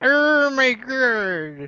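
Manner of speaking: high, slow funny voice.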